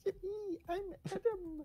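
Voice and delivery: mocking, teasing imitation. Teasing the other speaker by imitating how they sound: mocking imitation. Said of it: "That's what you sound".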